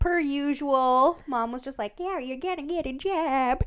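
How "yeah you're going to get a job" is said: matter-of-fact, matter-of-course tone. Retelling what Mom said about getting a job: imitating Poppy. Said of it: "That's perfect impression".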